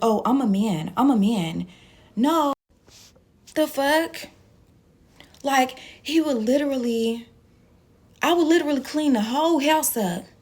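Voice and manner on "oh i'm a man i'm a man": argumentative, drawn-out delivery. Retelling what he would say when they argued: imitating him during an argument. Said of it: "when we would argue, he'd be like".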